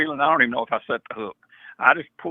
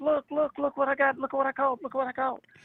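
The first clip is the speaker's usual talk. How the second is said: put-on excited scream, much higher; 12 semitones higher, 4 dB quieter than usual. Retelling running to his grandparents as a boy with his catch, retelling excited screaming. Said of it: "and I'm screaming".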